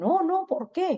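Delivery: high, innocent-sounding.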